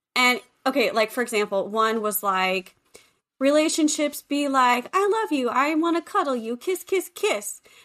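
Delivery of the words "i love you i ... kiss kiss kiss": put-on sweet puppet voice, much higher. Retelling a funny Elmo video about relationships, mock-lovey-dovey Elmo voice. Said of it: "But it's in the Elmo voice".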